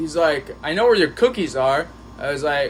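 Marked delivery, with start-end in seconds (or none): none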